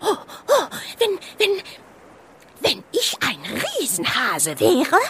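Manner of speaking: voice trembling with anger. A narrator reads the snow hare's outburst after the whale's reply, voice trembling with anger. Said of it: "mit vor Zorn zitternder Stimme".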